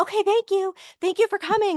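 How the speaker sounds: very high, acted-out holler. Retelling how staff shooed reporters out: imitating staff yelling. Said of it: "they start yelling and they're like".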